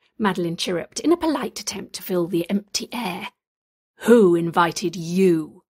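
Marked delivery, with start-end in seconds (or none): 4.0-5.5 big, resounding, booming voice. The voice demands to know who invited Madeline, booming. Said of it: "The voice boomed".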